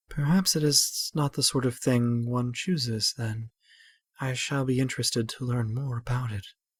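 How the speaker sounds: talking mostly to oneself. Reading a character's reply aloud, talking mostly to herself. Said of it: "talking mostly to herself".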